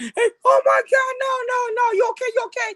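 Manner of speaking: mock frantic, alarmed, panicked yell, very high. Retelling how a girl reacted when her dad faked electrocution: imitating a panicked shout. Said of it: "she went and shot".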